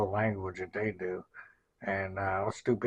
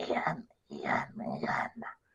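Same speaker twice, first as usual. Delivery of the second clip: whispered, spitty, deep, gravelly, breathy creature voice; 6 semitones lower than usual. Showing how to voice gremlins, doing a gravelly, deep gremlin voice. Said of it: "You have to do like a gravelly, deep voice".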